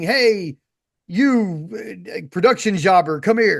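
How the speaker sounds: slow, drawn-out, play-acted scream. Retelling how Don Callis calls over a production jobber, imitating him screaming. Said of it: "he starts screaming".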